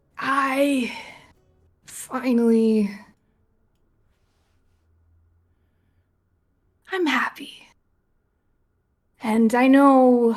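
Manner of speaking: put-on loud, slightly drunk, tipsy voice. A tabletop player's character prays to a god, a little bit drunk. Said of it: "a little bit drunk".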